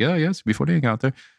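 put-on near-Irish accent. Retelling the old man talking about his eyes: almost Irish accent. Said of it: "it was almost like an Irish accent".

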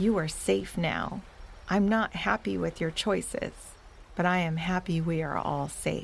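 ordinary delivery

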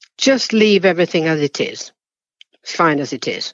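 mock grudging, sulky, sullen and dismissive tone. Retelling what the girl behind the counter said: imitating a sullen reply. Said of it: "Just in a very sort of sullen way".

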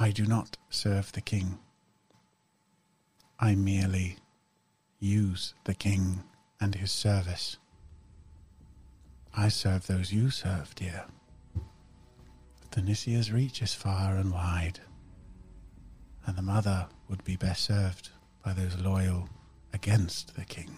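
hushed, very quiet voice. A character whose mouth stops moving as she speaks, in a very quiet voice. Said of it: "you hear the same volume of voice".

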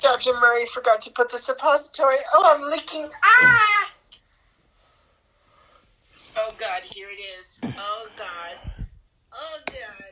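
high, loud, squealing comic wail.

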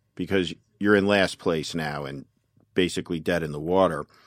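normal talking voice

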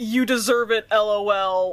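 ordinary delivery

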